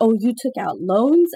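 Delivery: mock-disgusted. Retelling the moment the Kim family's wife reacts, retelling a disgusted line. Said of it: "she says it with such disgust".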